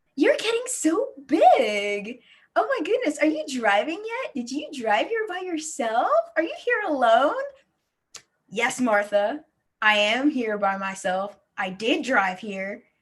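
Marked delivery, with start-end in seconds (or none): 0.2-7.4 put-on patronizing cooing, stretched-out, as if to small child. Describing typical small talk adults make with her generation, imitating Martha talking down. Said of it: "small talk with us and adults goes something like this".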